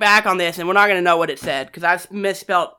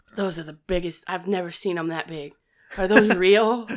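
put-on muttering under breath, quieter; 3 semitones lower, 6 dB quieter than usual. Retelling what a man standing in the corner said; imitating muttering under his breath. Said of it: "under his breath".

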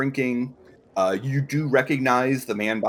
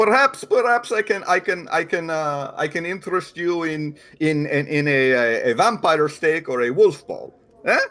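put-on, vague, loose Russian accent; 6 semitones higher, 3 dB louder than usual. Voicing a man in the bar room, speaking in a vaguely russian accent. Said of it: "I am using a vaguely Russian accent".

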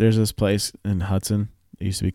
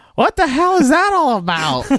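put-on shrill, very high, swooping old-lady yell; 6 dB louder than usual. Retelling how an old lady got out of her car after a near crash: imitating an old lady yelling. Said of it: "And yells".

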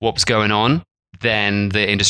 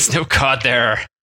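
odd, strange put-on pirate accent; 3 semitones higher than usual. Chatting with another speaker about expensive cod, in a strange pirate accent. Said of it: "Don't know why I'm doing a strange pirate accent".

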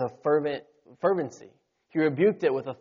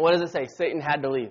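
ordinary delivery

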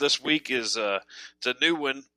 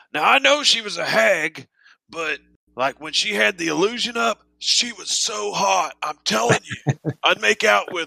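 put-on high, drunken, boastful rambling man's voice; 7 semitones higher than usual. Voicing a drunk tavern patron talking about a hag: voicing a drunk man. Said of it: "Philbin is the drunk one".

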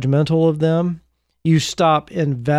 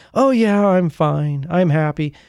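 hollow fake happiness with no real feeling. Showing how burned-out people claim to be fine: put-on zero-emotion fake happiness. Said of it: "zero emotion behind it".

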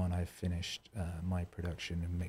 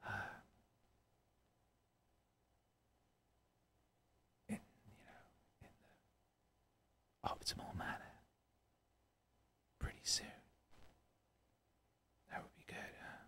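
whispering, quieter. Talking softly to a stream audience so no one wakes: whispering. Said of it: "I could probably stop whispering now".

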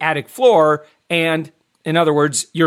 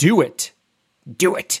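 deliberate, slow, drawn-out coaxing tone. Urging viewers to follow an energy-saving tip, doing an Emperor impersonation. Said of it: "I was doing the Emperor impersonation there".

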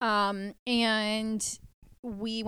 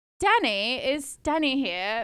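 higher, louder fake British accent. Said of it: "I put on a British accent".

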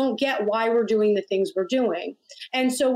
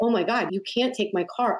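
put-on tearful, pleading voice. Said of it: "begging him".

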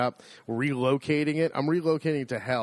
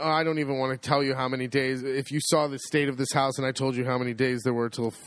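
ordinary talk, nothing marked

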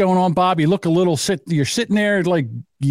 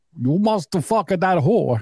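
put-on Eastern European accent. Voicing Melania yelling at her arrested husband, Melania accent impression. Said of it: "What's her accent?".

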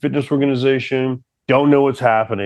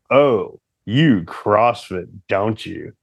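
put-on, low, smouldering, sultry voice; 4 semitones lower than usual. Retelling what a woman said to him when she looked up, mock-sultry voice. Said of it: "you're like sultry about it".

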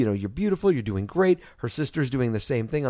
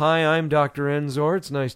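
put-on casual, nonchalant doctor voice, slower; 2 semitones higher than usual. Retelling a doctor walking in as a delivery nears, in a mock-casual doctor voice. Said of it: "Dr. fucking Casual comes walking in".

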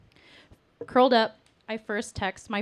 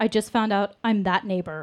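ordinary talk

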